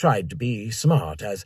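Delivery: ordinary delivery, nothing marked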